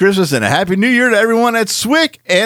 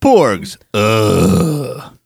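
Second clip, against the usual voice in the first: put-on suggestive groan, lower; 10 semitones lower than usual. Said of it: "supposed to sound a little more, uh, uh, upset than sexual".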